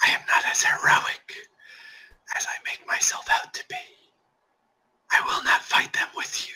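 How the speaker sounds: alien, otherworldly monster voice. The Nothic answers the whole party's question; Nothic voice. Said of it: "It's more of like this rotting, gremlin, scaly motherfucker. / It's more of like this rotting, gremlin, scaly motherfucker. Creepy looking. / I hope you guys are feeling like a little alien / Hannibal".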